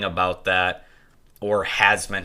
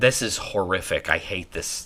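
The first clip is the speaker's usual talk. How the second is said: ordinary talk, nothing marked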